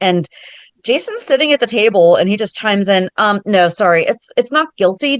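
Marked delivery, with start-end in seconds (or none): 3.2-5.2 casual, nonchalant, offhand, matter-of-fact delivery. Retelling how Jason corrected Drew at the table: imitating a nonchalant correction. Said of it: "The way he just said it so nonchalantly".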